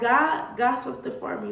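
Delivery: ordinary talk, nothing marked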